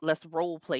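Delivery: ordinary talk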